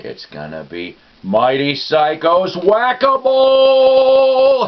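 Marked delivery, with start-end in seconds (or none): 1.2-4.7 very high, very slow, loud, swooping, Whack-A-Mole stretched out. Announcing a contest entry name: bad Oprah impression. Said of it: "in a very bad Oprah impre-, impression".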